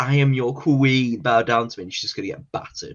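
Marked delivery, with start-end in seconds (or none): 0.0-1.8 loud, slow, haughty, declaiming delivery. Imitating Zelina boasting as queen: imitating Zelina as a haughty queen. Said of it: "she's gonna be all like".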